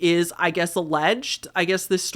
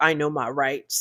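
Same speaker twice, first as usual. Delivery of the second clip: put-on smug, self-assured, trying-to-sound-smart know-it-all tone. Retelling how Nick talked to police: imitating Nick acting smart. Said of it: "trying to be all smart and be like".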